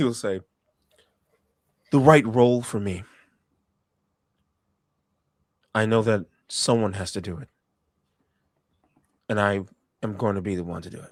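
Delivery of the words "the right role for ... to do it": earnest, dead-serious, low and grave tone. Narrator telling a story gives a character's line, serious tone. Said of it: "In a serious tone".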